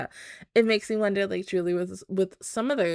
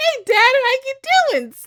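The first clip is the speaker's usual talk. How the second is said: very high pitch, swooping up and down; 10 dB louder than usual. Acting out a character greeting her dad before stabbing him: imitating Ruby. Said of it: "she's gonna be like".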